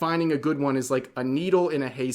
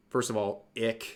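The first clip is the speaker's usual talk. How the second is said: usual speaking voice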